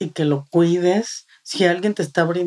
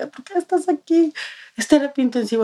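mock overwrought, hysterical, high voice; 9 semitones higher than usual. Retelling how she arrived asking why you were in intensive care, mock-hysterical. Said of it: "Pero bien histérica".

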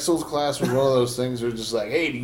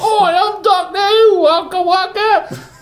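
very high, slow, fake Cockney accent; 9 dB louder than usual. Mocking the show's Cockney accents while discussing Doctor Who: mock Doctor Who Cockney accent. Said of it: "I don't like those Cockney accents that they do".

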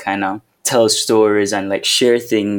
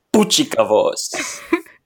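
terrible clumsy put-on Spanish accent. Retrying a Spanish phrase after being corrected, in a terrible Spanish accent. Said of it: "my terrible Spanish accent".

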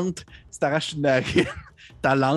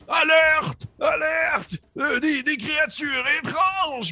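shrill, very high, slow, drawn-out howling scream. Voicing an orc who spots strangers: screaming an alarm. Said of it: "il se met à hurler".

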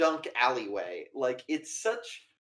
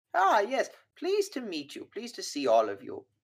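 put-on sweet old-woman voice, high and sing-song; 6 semitones higher than usual. Voicing the old caretaker at the front desk greeting the group: old woman voice. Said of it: "there's this old woman who's".

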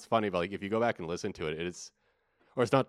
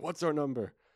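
high-pitched angry yell, like a tantrum. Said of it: "has this big, you know, temper tantrum and starts yelling".

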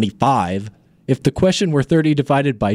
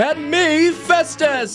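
very high, shouted circus-ringmaster announcer voice; 13 semitones higher than usual. Festus introducing himself on the podcast, trying again: announcer voice. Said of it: "That wasn't a very good announcer voice, let me try it again".

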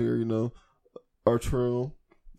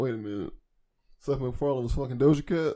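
plain

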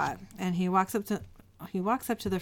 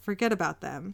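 ordinary delivery

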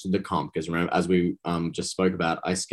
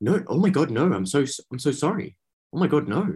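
put-on apologetic voice, higher pitched; 7 semitones higher than usual. Retelling a reality show scene, apologizing to Tully: Taras impression. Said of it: "I'm working on my Taras impression".

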